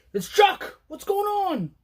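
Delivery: very high, excited, freaked-out yelling. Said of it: "Usually I come in and I'm yelling, I'm all excited, I'm freaking out".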